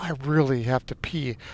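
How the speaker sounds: soft, hushed half-whisper under the breath. Retelling what she half-whispered while the baby settled: imitating a half-whisper. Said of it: "Christina whispers".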